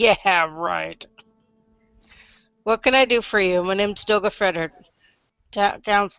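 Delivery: doubtful, unimpressed, skeptical dwarf character voice. Voicing a dwarf counselor who raises an eyebrow at the adventurers: voicing a skeptical dwarf counselor. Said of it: "just kinda raises an eyebrow at you, like".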